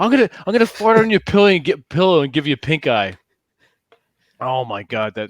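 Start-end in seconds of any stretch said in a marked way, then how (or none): 0.0-3.2 put-on pitched-up, drunken voice. Retelling what a drunk stranger said next to them: imitating a drunk stranger. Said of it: "that drunk couple next to us".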